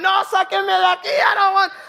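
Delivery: put-on loud, high-pitched hollering in mixed Spanish. Speaker retells a tricked man on a train; retelling him yelling in Spanish. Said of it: "he's yelling".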